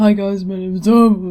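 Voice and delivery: voice breaking and jumping, cracking mid-sentence. Imitating a cousin whose voice cracked mid-sentence: imitating a cracking voice. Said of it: "My cousin's voice used to do that all the time".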